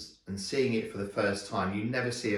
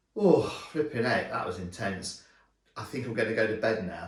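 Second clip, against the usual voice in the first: ordinary delivery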